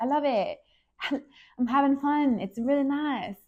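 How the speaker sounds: fake, botched, really bad, high British accent. Retelling a British woman's reply when told she isn't happy: bad British accent. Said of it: "That's a really bad British accent".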